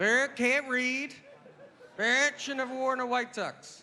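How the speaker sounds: high, talking-parrot voice. The speaker voices his negative thoughts about himself in a parrot voice. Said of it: "all my negative thoughts about myself are in a parrot's voice".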